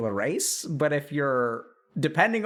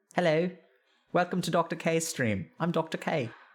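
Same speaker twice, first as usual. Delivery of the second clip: attempted put-on British accent. Trying out an accent on a stream intro, attempted British accent. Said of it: "Can I do a British accent? ... Is that British?".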